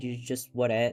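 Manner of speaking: usual speaking voice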